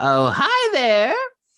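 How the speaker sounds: very high, loud little goblin voice. Voicing a goblin who greets the players walking into the bar: goblin voice. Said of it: "you hear the goblin go".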